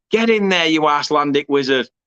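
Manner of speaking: ordinary talk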